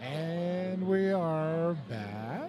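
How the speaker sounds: rising question-like lilt on "back". Welcoming viewers back for the second half: rising question inflection. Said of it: "I said that with an inflection".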